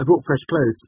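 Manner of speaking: very high cheerful voice. Reading a novel, Sim speaks cheerily to the first-person narrator. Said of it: "Sim said cheerily".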